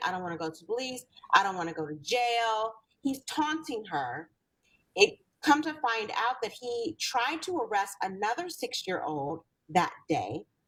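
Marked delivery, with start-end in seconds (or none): 0.0-2.7 mock child crying, pleading, lower and faster. Retelling how a six-year-old begged a police officer, imitating a child crying.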